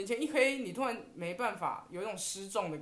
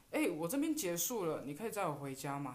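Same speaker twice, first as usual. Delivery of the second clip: acted, totally unruffled, calm, easygoing tone; 3 semitones lower than usual. Retelling a phone call asking a friend for a ride home: imitating own calm tone. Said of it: "就是这种口气".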